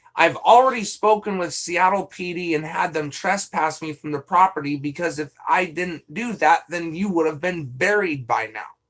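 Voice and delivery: ordinary talk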